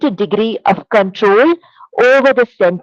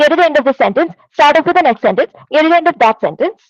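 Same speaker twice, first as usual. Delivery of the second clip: nervous, hurried, very fast, pitched-up gabble; 5 semitones higher than usual. Speaker showing how nervous presenters talk, speaking very fast. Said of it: "let me just speak very, really, really fast".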